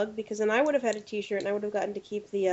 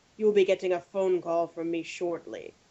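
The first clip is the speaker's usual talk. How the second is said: dark, ominous, foreboding, threatening tone; 3 semitones lower than usual. Retelling how Kyle tweets at backers: imitating Kyle sounding ominous. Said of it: "it sounds really ominous the way he says it".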